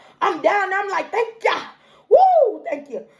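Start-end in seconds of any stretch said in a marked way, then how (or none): 1.1-3.0 mock hollering out loud, swooping and animated. Retelling thanking God on knees in the store: imitating own past shouting. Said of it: "So I'm shouting".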